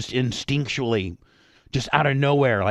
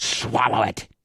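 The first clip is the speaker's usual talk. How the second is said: put-on stern, commanding voice; 2 semitones lower than usual. Retelling how a mom flipped into mom mode: imitating stern mom mode. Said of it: "flipped into mom mode, and she goes".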